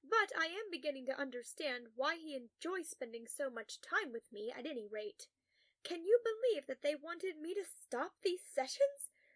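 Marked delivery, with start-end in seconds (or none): none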